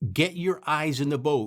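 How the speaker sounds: mild, half-yelled drill sergeant voice. Speaker recalling a man screaming at everybody, imitating a man screaming. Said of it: "this guy is screaming at everybody".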